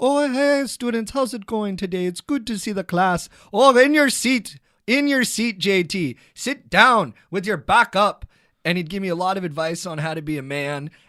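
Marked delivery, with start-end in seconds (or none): 0.0-8.3 charming, cheeky Irish lilt, high and loud. Recalling the junior high priest greeting the class, Father Pat's cheeky Irish accent. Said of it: "a cheeky accent".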